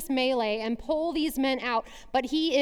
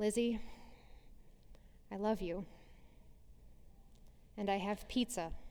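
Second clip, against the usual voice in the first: hushed, soft, tender, gentle near-whisper; 5 semitones lower, 14 dB quieter than usual. Retelling a mom speaking through her daughter's door, soft voice. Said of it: "says in a soft voice".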